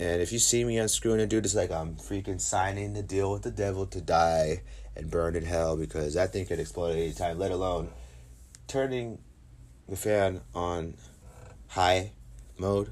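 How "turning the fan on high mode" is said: very slow, halting, broken-up phrasing. Speaker talking about unscrewing fans, very slow. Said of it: "Why I said that slow".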